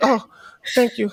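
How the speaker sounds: a woman's high-pitched little voice. Retelling a woman thanking the man who pulled her off: imitating a woman's high-pitched voice. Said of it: "what is this voice you giving her?".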